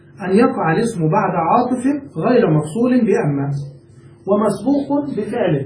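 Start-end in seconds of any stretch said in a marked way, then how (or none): none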